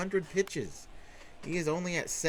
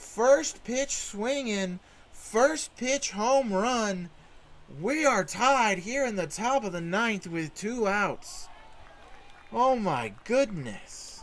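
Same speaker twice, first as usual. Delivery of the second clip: all-out excited shouting, yelling call; 4 semitones higher, 4 dB louder than usual. Calling a game-tying home run in the ninth for the folks listening, yelling. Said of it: "Sorry for the yelling".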